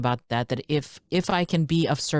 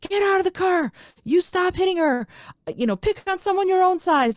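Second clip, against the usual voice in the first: very high yelled voice. Retelling getting out of the car to stop a man hitting her, retelling a yell. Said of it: "I started yelling at him".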